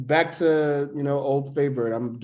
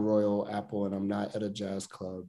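usual speaking voice

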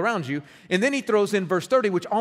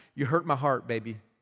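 put-on sorrowful, hurt, wounded motherly voice; 5 semitones lower, 4 dB quieter than usual. Imitating a mother with puppy dog eyes: imitating a hurt mother. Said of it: "break my heart when she looked at me with those puppy dog eyes".

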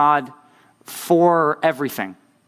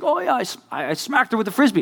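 put-on happy voice, higher pitched; 7 semitones higher than usual. Retelling what a man told them, imitating a happy voice. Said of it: "in all this happy voice".

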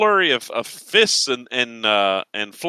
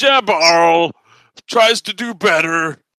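tearful barbarian voice, higher and louder; 5 semitones higher, 4 dB louder than usual. Voicing the insulted barbarian's reply after his attack, Jabarl sobbing a little. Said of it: "you hear a little sob".

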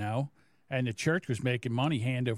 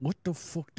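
talking through clenched, gritted teeth; 6 semitones higher than usual. Retelling what their mom asked on arriving, imitating mom talking through teeth. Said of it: "she always used to talk to me through her teeth".

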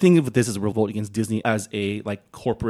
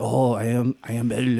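put-on French accent. Joking about how Belle should sound in a French movie: Belle in a French accent. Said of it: "when they do these accents".

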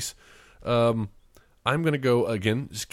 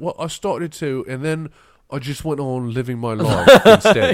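very loud, put-on British accent; 9 dB louder than usual. Quoting a line from Forgetting Sarah Marshall: put-on British accent. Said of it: "that's my British accent".

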